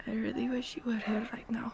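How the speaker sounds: barely audible, very quiet whisper. Voicing a character alone in the cold, whispering to himself. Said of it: "and he whispers to himself".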